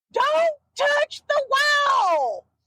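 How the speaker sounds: shouting.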